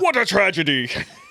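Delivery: put-on puppet eagle character voice. Reacting to bad news, a speaker exclaims in the Sam the Eagle voice. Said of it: "I'm only going to address news about miscarriages in the Sam the Eagle voice".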